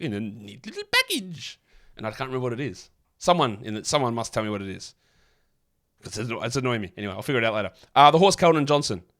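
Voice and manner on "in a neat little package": super sarcastic, slow, swooping and drawn out. Recalling a Simpsons episode line: imitating Homer Simpson, super sarcastic. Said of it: "it sounds like super sarcastic".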